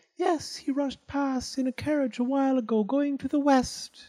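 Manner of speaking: very high, whistly voice with words whistled out. Narrator voicing Flute Falls answering Ichiro, high, whistly voice. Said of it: "came a high, whistly voice".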